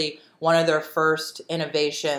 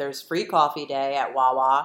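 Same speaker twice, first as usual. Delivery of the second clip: normal talking voice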